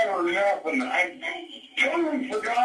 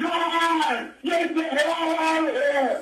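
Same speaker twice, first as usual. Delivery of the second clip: frantic yelling. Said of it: "He's still yelling at it".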